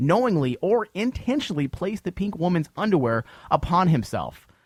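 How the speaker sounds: plain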